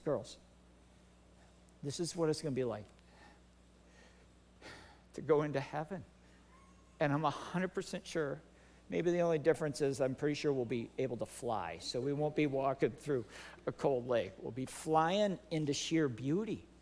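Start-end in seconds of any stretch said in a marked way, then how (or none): 0.0-6.0 hushed, soft half-whisper under the breath. Retelling words said to two girls at a lake: retelling a half-whisper. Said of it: "I whispered to the girls".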